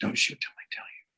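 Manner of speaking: hushed, breathy whisper. Retelling a hunting guide's instruction before a shot: imitating a whisper. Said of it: "He's whispering this".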